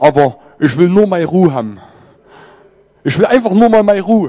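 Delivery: put-on Hessian German dialect voice. Imitating Jona, who speaks good Hessian dialect: Jona's Hessian dialect. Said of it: "mit gutem hessischen Dialekt sprechenden Jona ... wenn ich das nicht originalgetreu nachahmen kann".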